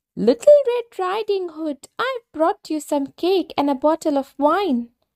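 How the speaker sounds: tiny, very high, small put-on voice. Narrating the fairy tale, the wolf answers grandmother at her door: soft little voice. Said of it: "putting on a soft little voice".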